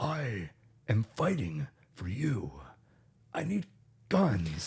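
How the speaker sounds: slow, dragged-out, strained, hoarse throat voice. Mocking how John Wick says every line, in a John Wick laryngitis voice. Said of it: "it's like he has laryngitis".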